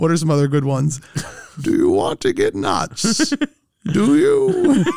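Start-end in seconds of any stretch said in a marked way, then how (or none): 1.6-4.8 very high-pitched, slow, drawn-out, swooping villain voice. Quoting a line from the 1989 Batman, done as: Bane impression. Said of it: "but as Bane".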